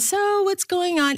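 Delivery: high chatty voice.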